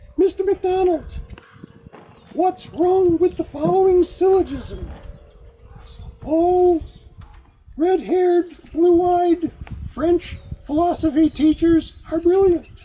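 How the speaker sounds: mock high-pitched voice. Retelling what a French philosophy teacher said in class: imitating a teacher's high voice. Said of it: "he had a very high voice".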